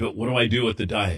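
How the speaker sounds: plain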